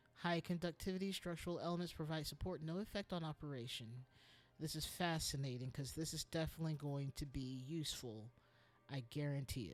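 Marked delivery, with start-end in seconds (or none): 8.9-9.8 TV commercial pitchman voice, dropped low, selling hard. Commenting on an item, the speaker slips into a Men's Wearhouse ad guy voice. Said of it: "I sound like the guy from Men's Warehouse".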